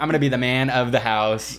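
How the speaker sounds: plain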